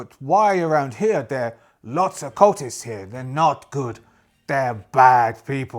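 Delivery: put-on cowboy accent. Voicing a character in a game conversation about cultists, cowboy accent. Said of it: "It sounds like I'm, I'm playing cowboys".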